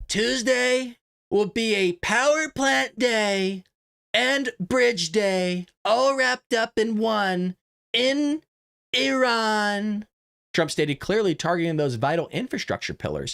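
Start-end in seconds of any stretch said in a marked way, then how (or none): 0.1-10.1 very slow, pitched-up drawl, Iran stretched out long. After a swig of coffee, read out the president's statement in his voice, as a Donald Trump impression. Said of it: "I'll try to read it in his voice... we'll do the Trump impression".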